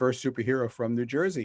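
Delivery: ordinary delivery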